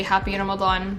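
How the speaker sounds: ordinary talk, nothing marked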